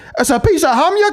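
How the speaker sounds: very high-pitched fake Scottish accent. Retelling walking down a street doing the accent: imitating a Scottish accent. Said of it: "do the accent".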